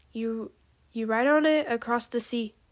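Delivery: ordinary delivery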